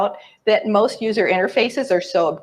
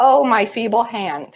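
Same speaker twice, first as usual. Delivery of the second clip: put-on sarcastic tone. Quoting the opening of a talk show host's blog: imitating sarcastic tone. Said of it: "she goes on to sarcastically say".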